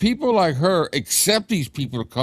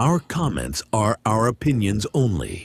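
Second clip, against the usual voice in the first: put-on announcer voice, lower; 8 semitones lower than usual. Reading the show's disclaimer aloud: disclaimer voice. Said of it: "the voice that I use for the disclaimer".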